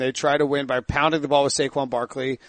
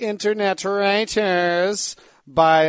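mocking put-on nerd voice, pitched up high; 5 semitones higher than usual. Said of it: "that was my nerd mockery voice".

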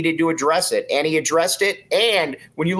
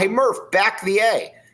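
put-on, high, hollered-out called yell; 5 semitones higher than usual. Retelling calling out to a coach in Section seven: imitating own past yell. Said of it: "I yelled out".

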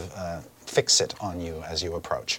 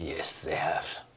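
soft, cool put-on voice; 4 semitones lower, 7 dB quieter than usual. Game master answering a player as a character, in a cool character voice. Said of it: "he's got a cool voice".

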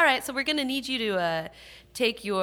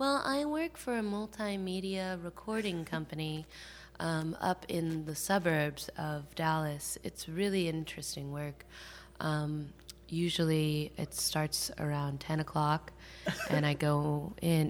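deliberately dull put-on voice, lower, quieter; 4 semitones lower, 7 dB quieter than usual. Retelling own reply when asked about work, deliberately dull put-on voice. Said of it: "do you say it in that voice?".

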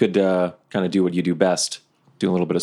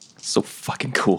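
muttered quietly under the breath; 3 semitones higher, 3 dB quieter than usual. Retelling walking up to a man at a table, saying it under their breath. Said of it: "And under my breath".

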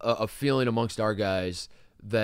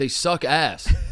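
put-on screaming, higher and louder; 5 semitones higher, 6 dB louder than usual. Retelling screaming at our guys during the game: imitating own screaming. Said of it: "screaming at our guys".

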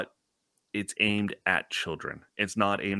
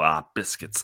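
put-on irritated kid voice; 3 semitones lower than usual. Retelling what a six-year-old says when he's pissed off, imitating an annoyed child. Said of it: "when he's pissed off, he'll go".

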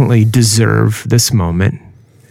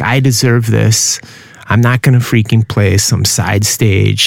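ordinary delivery

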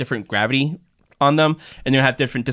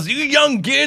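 mock old man hollering, pitched up and loud; 13 semitones higher than usual. Retelling how he is always yelling on the lawn: imitating someone yelling. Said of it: "the lawn always yelling".

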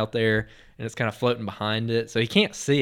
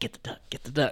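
breathy, under-the-breath whisper; 2 semitones higher, 6 dB quieter than usual. Retelling watching a swimmer about to reach a duck, whispering to oneself. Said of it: "I'm like whispering to myself".

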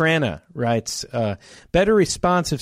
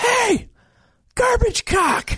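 put-on shout, higher. Retelling yelling out at the other speaker: imitating own past yell. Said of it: "I was yelling out".

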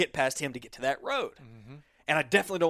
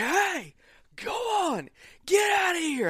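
very high, shrill, swooping yell. Speaker recounting a bear coming back toward them, retelling yelling at a bear. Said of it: "And I'm just yelling".

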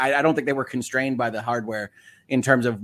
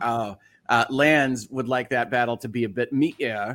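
ordinary delivery

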